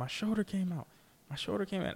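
put-on, high-pitched yelling. Retelling a shoulder injury during a game: imitating Matt Stafford yelling. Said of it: "he's yelling".

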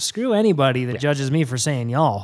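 ordinary talk, nothing marked

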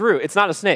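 ordinary talk

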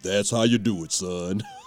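deep, low baritone, pronounced. Retelling how a man handed back a broken violin, in a deep baritone voice. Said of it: "said in a deep baritone".

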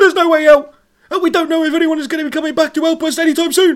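one-breath rapid-fire, very high and loud. Acting a character's line in an episode, very fast in one breath. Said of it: "if everyone spoke with the pace of Gav".

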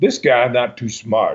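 put-on male French-Canadian accent. Retelling what a man said on a TV show, Joe's French-Canadian accent. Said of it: "he had that French-Canadian accent".

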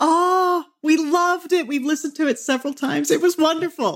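mock very high, thrilled, excited gushing voice. Retelling how a listener reacted on meeting them: imitating Nina sounding excited. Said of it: "Her face totally lit up".

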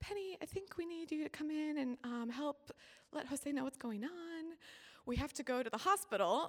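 small, sweet-sounding little voice. Retelling how the mom poked her head out the door, imitate her sweet little voice. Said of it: "in her sweet little voice".

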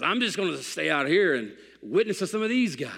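hoarse, rasping voice. Retelling what a soul winning buddy said before a haircut: imitating Dale's raspy voice. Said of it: "he had a raspy voice".

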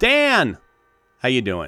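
loud shouting. Greeting the co-host at the top of the episode: yelling a greeting. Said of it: "You can't be yelling at me like that".

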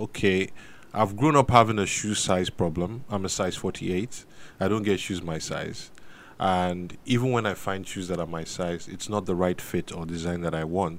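ordinary talk, nothing marked

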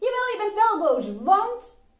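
high, loud, insistent voice pushing back.

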